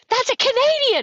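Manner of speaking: high, excited crowd shouting like thrilled fans. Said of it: "they're like".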